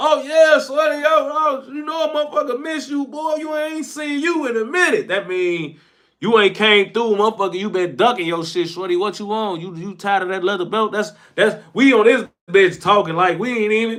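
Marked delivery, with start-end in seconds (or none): 0.0-10.9 mock-sarcastic friendly tone, put-on sarcasm. Retelling how people greet each other, in mock-sarcastic friendliness. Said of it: "We woofing in, in, in sign and in, in, in, in sarcasm".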